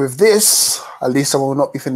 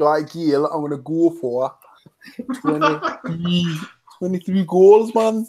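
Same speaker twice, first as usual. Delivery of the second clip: high, mock Geordie accent. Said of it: "I'm trying to do a Lee accent".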